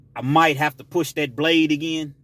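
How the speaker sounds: usual speaking voice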